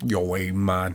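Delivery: terrible, failed put-on Boston accent. Guessing what accent a shark would have, trying a terrible Boston accent. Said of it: "I think a shark would be like a Boston accent".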